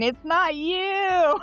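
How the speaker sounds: acted, frantic, very high panicked shriek, long you. Retelling running away from a sniper in a game: imitating own screaming. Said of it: "and I'm screaming".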